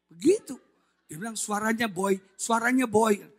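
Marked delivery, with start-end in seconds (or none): none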